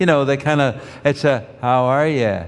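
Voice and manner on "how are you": flat, level Michigan accent with lilting Canadian edge. Comparing regional accents, demonstrating how people in Michigan talk, flat Michigan accent. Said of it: "that Canadian lilt to it".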